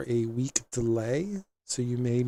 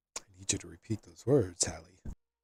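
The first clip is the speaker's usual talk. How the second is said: hushed half-whisper in a character voice; 6 semitones lower, 6 dB quieter than usual. Voicing a Jedi master who asks the apprentice to repeat the oath: half-whispering in character. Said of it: "Whispers to you".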